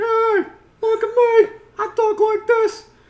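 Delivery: very high, very loud, belted cartoon voice. Describing a cartoon cat that sounded like Pleakley: Pleakley voice. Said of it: "sounded like Pleakley".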